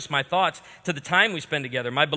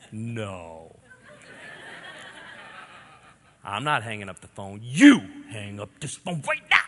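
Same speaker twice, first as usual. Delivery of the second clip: put-on "no" stretched out with babyish anger; 5 semitones lower than usual. Retelling late-night dorm phone calls about who hangs up, retold angry baby voice. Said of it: "You got that like angry baby voice".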